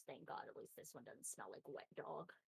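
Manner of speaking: hushed, whispered mutter under the breath. Narrator voices a woman muttering as the player walks off, muttering under breath. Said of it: "she mutters".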